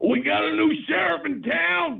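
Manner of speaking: furious, very high-pitched, loud, rasping bark. Asked to try the line again, now angry. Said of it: "Try it angry".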